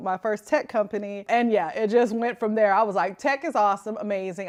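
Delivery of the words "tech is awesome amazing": usual speaking voice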